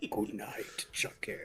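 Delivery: imitated really deep voice. Retelling a line from a scene, imitating a really deep voice. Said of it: "his voice gets really deep".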